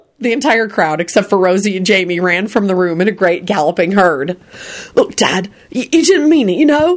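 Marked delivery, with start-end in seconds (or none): 4.9-7.0 anxious, worried, soothing, pitched-up voice. Jamie kneels in front of his stunned dad, Quentin, speaking worriedly. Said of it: "Jamie said worriedly".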